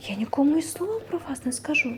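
scared, anxious, frightened voice. Narrator reads a girl answering a little magic man, frightened. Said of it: "злякано промовила вона".

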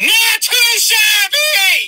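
voice squeaking up, very high. Reacting to a Southern Arizona vacation guide, with a squeaking voice. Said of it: "My voice squeaked in that one".

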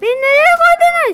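high, loud, outraged yelling.

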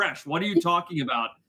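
put-on very serious voice. Retelling a friend's story, imitating Mitch sounding very serious. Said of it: "gets very serious".

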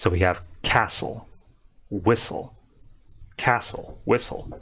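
s stressed in castle and whistle, t silent. Demonstrating how to pronounce two words, stressing the s in castle and whistle. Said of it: "more emphasis on the S sound".

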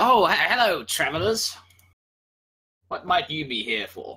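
polite farmer voice. Voicing a farmer who greets the travelling party: voicing a farmer character. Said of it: "one of the farmers ... comes up to the party and he says".

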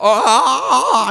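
weird mock-excited yell of 'ah'. Retelling how he got so excited he yelled, imitating a weird excited 'ah' yell. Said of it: "He was so excited, he yelled, and it was one of the weirdest sounding yells".

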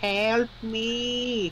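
very high cartoon wail, "me" drawn out. Speaking for the missing Luigi, calling out in a Luigi voice impression. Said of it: "How was my voice impression of that?".

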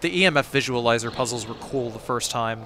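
normal talking voice

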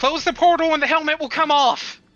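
high, loud yelled-out call. Voicing a character yelling to the others in a fight: yelling out. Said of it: "yell out".

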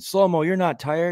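very high shouted call. Retelling a player's sideline remark to a teammate: imitating someone yelling. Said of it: "standing on the sideline yelling at Kyle Anderson".

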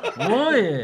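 loud, clumsy comic tsukkomi-style snap-back.

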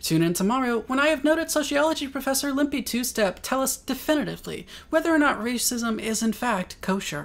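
high newscaster voice. As a news anchor announcing tomorrow's guest and today's show: Sandra Beaver anchor voice. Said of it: "There sits anchor Sandra Beaver".

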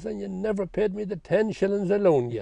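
mock drunk man yelling. Retelling how a drunk man shouted up at the graveyard: imitating a drunk man shouting. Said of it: "he'd stop and he'd look up and he'd shout".

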